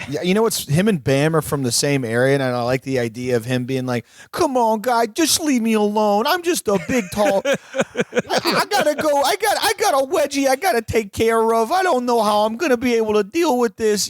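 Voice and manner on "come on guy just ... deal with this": put-on Westchester accent, pitched very high. Imagining a man begging to be left alone, in a Westchester accent. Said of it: "like this like the Westchester accent or whatever".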